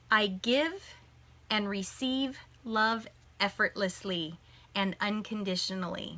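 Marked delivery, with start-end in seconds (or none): none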